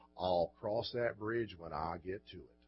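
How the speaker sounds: very low, deep Texas drawl. Quoting Lyndon Johnson's answer to questions about what he would do, Lyndon Johnson's Texas drawl. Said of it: "he said these words in his Texas drawl".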